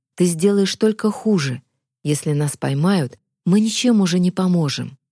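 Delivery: ordinary delivery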